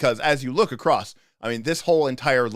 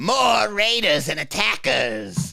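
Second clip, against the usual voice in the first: watery water-sprite voice crying out, pitched up; 8 semitones higher than usual. Voicing a water sprite crying out from beneath: watery voice crying out. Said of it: "a watery voice cry out".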